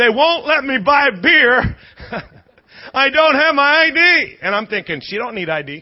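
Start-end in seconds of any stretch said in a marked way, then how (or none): 0.0-4.4 mock screaming, high, slow and dragged out. Retelling a wife screaming at her husband from the stairs, mock screaming. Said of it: "she's screaming at him".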